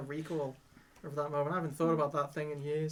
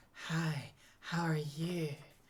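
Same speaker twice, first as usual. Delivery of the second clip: very slow starlet voice, each word lazily drawn out. Imitating a cartoon woman's voice actress again: soft Marilyn Monroe-ish voice. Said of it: "Kind of Marilyn Monroe-ish. With the soft voice".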